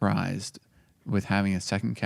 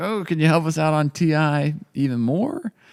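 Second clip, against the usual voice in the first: high-pitched, pleading, begging tone. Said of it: "we're like".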